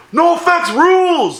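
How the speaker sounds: acted-out very high, loud shout. Retelling how someone in class yelled after class: imitating someone yelling. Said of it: "he just yelled".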